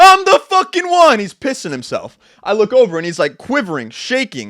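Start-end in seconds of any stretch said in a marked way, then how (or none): 0.0-1.2 very high, very loud, lung-busting shrill shriek. Telling about the dog pissing on the carpet, the speaker reenacts their past self: retelling a scream. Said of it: "I'm screaming".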